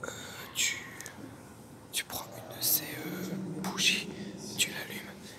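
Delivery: soft, unvoiced whisper.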